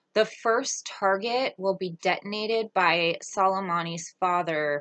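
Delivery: ordinary delivery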